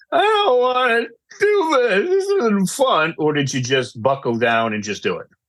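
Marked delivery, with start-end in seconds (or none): 0.1-3.1 slow, very high, swooping, crying whiny voice. Asking whether someone complained about college work, mock-whiny complaining. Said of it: "I gave that whiny voice because that's how I felt".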